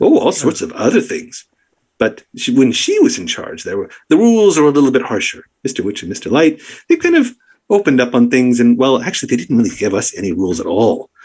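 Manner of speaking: cheerful, lively, animated, swooping creature voice. Game master voices an enchanted creature answering the players: happy, animated creature voice. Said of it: "They're all at this point happy and animated. You've, I'm assuming, gone through with the brush, painted their names back in. And what do you want to do? Right now, they have no idea like why you're h".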